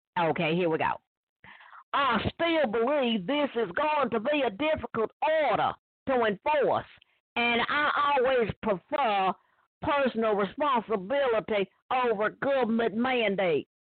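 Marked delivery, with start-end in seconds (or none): 1.9-13.6 put-on Southern US accent, pitched higher. Reading a quoted statement aloud to listeners, in a put-on southern voice. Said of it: "I'm gonna say it in the southern voice".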